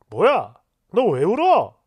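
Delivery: baffled, bewildered, dumbfounded tone. Retelling how the boyfriend reacted to her crying: imitating someone baffled. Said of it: "되게 황당해하는 거예요".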